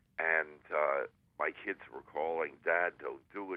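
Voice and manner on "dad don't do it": ordinary talk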